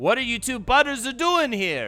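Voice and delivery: put-on Italian accent. Telling a joke, the speaker voices the chef greeting two butters, in an Italian accent. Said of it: "says in an Italian accent".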